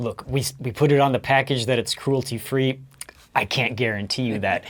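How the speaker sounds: quiet, hushed half-whisper. Half-whispering in character to a creature about a package: half-whispering in character. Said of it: "I whisper to him".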